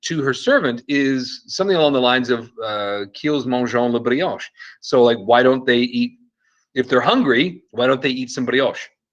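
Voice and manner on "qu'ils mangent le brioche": bad, horrific put-on French pronunciation. Quoting a queen's reply to her servant, in a horrific French accent. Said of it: "pardon my horrific French accent".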